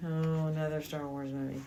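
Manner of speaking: bored delivery spoken through a big yawn. Retelling own past reaction to crowds going to see a movie: imitating a bored yawn.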